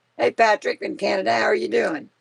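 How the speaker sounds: scratchy voice. Greeting a viewer by name, scratchy voice. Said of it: "Forgive my voice. I'm kinda, really kinda scratchy".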